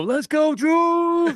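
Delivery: put-on, very high, rousing cheering yell. Retelling cheering at a celebrity softball game: retelling own yell. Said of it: "I yelled out".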